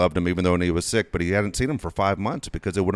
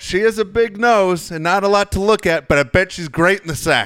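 mock yell, much higher; 11 semitones higher, 6 dB louder than usual. Retelling what a friend's dad yelled out during the movie, imitating a scream. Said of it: "Just screams it out".

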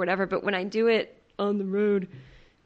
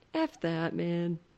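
casual, offhand radio host voice; 3 semitones lower, 5 dB quieter than usual. Showing how a radio host says it: Howard Stern impression. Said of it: "my Howard Stern impression".

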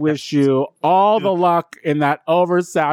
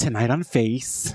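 put-on announcer-style show-host voice; 4 semitones lower, 6 dB quieter than usual. Announcing upcoming shows, imitating Shay. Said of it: "I'm gonna channel my best Shay here".

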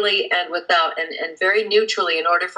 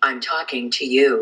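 play-acted, slow, thoroughly disgusted tone; 5 semitones lower than usual. Retelling the first time speaking to Siri: imitating Siri's disgusted reply. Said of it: "very disgustedly said".

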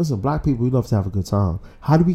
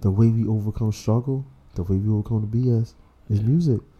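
put-on soft, sensual, sultry voice. Making a point about music to another speaker: put-on soft sensual voice. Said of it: "Soft sensual voice right now".

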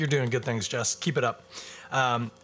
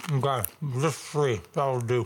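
talking with mouth full, slower. Eating chips while talking, talking with mouth full. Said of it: "I'm talking with my mouth full".

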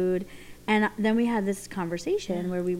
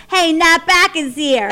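Philadelphia accent, higher pitch and slower pace; 9 semitones higher, 13 dB louder than usual. Speaker showing how they'd greet listeners in their hometown accent, Philly accent. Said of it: "my Philly accent, I go".

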